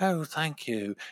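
calm, mellow, angel-like tone. A fan retelling her reply after meeting her, in a mellow Mon Mothma voice. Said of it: "like that Mon Mothma voice".

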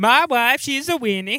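put-on high, loud, odd Swedish accent drifting off-course. Recalling a performer's accent bit, doing Billy Crystal's weird Swedish accent. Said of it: "That weird Swedish accent that like weirdly sort of swerved into like Borat territory".

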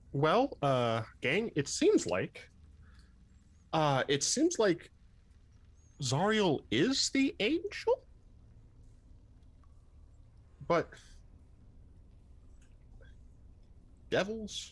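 musing aloud to himself with swooping pitch. In character, working out who the angel is: pondering out loud. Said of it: "pondering this, uh, out loud to himself".

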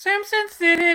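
very high-pitched, very loud, irritating shrill voice. Reading out a listener's comment aloud: high-pitched, annoying voice. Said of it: "with that fucking high-pitched, annoying voice".

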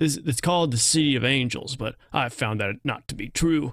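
country and western style voice. Quoting the stranger's opening line from the movie: Sam Elliott voice. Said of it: "That was my Sam Elliott voice".

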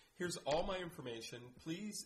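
normal talking voice

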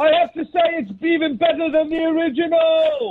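shouting. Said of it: "He yells so much".

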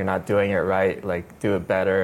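normal talking voice

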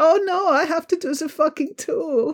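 camp German accent, very high and slow. Imitating a film's director after saying the german accent comes out camp: camp german accent. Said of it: "an accent of a German person speaking English without it sounding really camp".

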